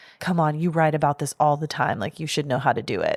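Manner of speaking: acted mutter, whispered under breath. Describing a writer trying to pick a lock, retelling a whisper under his breath. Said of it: "he whispers under his breath".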